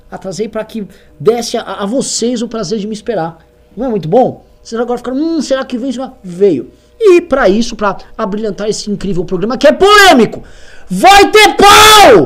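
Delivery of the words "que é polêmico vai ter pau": very high, very loud hype yell, pau stretched. Speaker hyping up the controversial show before introducing a guest: sensationalist shouting. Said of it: "Tô gritando de forma sensacionalista".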